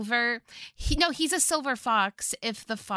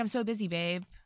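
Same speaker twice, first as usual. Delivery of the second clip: usual speaking voice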